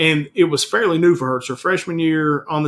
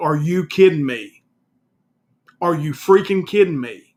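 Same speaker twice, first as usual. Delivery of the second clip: put-on furious, angry outburst. Retelling confronting a man who asked to pull up the mask: imitating own angry outburst. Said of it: "Sir, calm down".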